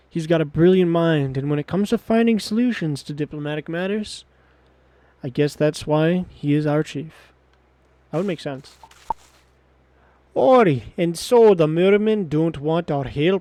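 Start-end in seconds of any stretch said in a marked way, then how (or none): 10.4-13.5 put-on thick, laid-on Scottish accent, slow and raised. Voicing a character, in a super hard scottish accent. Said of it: "like super hard Scottish".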